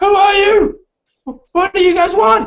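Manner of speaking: very high, stammering, stumbling shout. Narrator voices someone shouting back at the group, in a stammering shout. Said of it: "this stammering voice shouting back".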